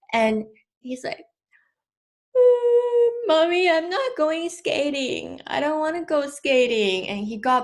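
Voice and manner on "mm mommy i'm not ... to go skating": put-on high, tearful, pleading crying-child voice. Retelling a son's words after a car door hit him: imitating a crying child. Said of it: "he had tears all in his eyes".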